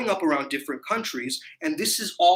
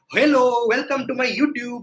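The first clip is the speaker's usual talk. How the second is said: high, raised put-on Indian English accent; 6 semitones higher, 5 dB louder than usual. Showing how he says he does not speak, in a put-on Indian accent. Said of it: "I don't have an accent and I don't speak like this".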